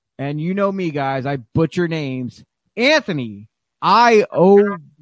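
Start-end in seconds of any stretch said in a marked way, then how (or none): 2.8-4.7 drawn out syllable by syllable, very slow, raised. Introducing a guest from Pro Wrestling Magic by name, very slowly. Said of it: "I had to say it very, very slowly".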